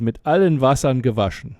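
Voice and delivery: ordinary talk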